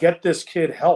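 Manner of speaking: urgent, insistent, mildly frustrated outcry. Retelling reading the research material, imitating own yelling. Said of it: "I'm yelling at the pages saying".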